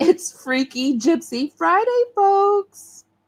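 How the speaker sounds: words broken by laughter. Saying the episode's title, laughing while talking. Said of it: "I can never say this without laughing".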